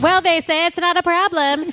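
put-on basic girl voice.

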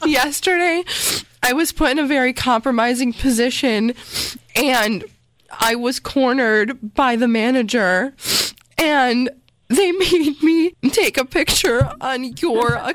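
put-on emotional tremble. Begging the listener not to be mad, the speaker explains: fake trembling voice. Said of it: "I don't know why you're so emotional".

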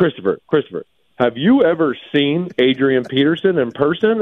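put-on football announcer, sportscaster-style voice. Retelling a call after the game, doing his Phil Simms voice. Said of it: "I'm going to do my Phil Simms voice here".

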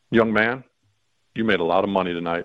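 imitated whisper. Retelling what someone whispered to him after the game: retelling a whisper. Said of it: "he whispers in my ear".

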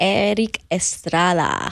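slow, deliberate, drawn out, every syllable spaced. Asked to say the name, she says it slowly. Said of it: "now she says it slowly".

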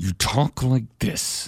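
slow, seething whispered rage beyond yelling. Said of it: "that angry voice you do where you don't even yell anymore".

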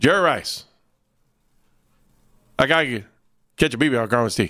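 put-on Louisiana accent in short, punchy, staccato bursts. Retelling a sports chat with the station owner, speaker quotes him: southern accent, staccato delivery. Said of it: "A southern accent with a staccato delivery".

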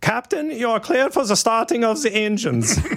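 very high-pitched put-on German accent. Imitating a German crewman pushing the airplane back, talking to the captain, German accent impression. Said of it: "in their awesome German accent".

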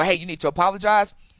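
ordinary talk

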